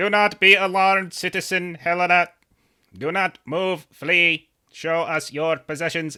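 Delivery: loud, high, mechanical sentinel robot voice. Storyteller voices the watchers confronting citizen helena: robotic watcher voice. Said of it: "the robotic voices of the watchers".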